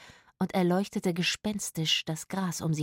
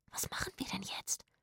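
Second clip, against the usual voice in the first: eager, excited, very hushed whisper; 2 semitones higher, 12 dB quieter than usual. Zora asks her companions at the cemetery what to do; excited whisper. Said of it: "wisperte Zora aufgeregt".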